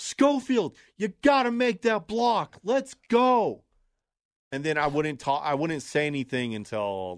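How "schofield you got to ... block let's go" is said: mock very high-pitched sports-fan yell. Recalling what he used to yell at Broncos games, retelling his own yell. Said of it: "I was just yelling".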